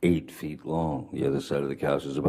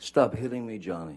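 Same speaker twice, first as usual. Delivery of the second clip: mock upset, high-pitched, freaked-out screaming; 6 semitones higher than usual. Recounting what she screamed at Johnny while on the phone, imitating Miss Heard's freaked-out, high-pitched scream. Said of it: "she's screaming in in her best um, freaked out, upset voice, high-pitched".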